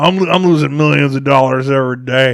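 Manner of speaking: put-on New York mobster accent. Joking about a conspiracy theory to listeners, voicing angry gangsters, imitating a New York mobster accent. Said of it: "So that was a mafia".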